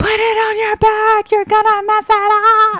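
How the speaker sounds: very high shriek at full volume. Retelling screaming at a girl running on a gravel road: imitating own screaming. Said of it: "and I'm screaming at her".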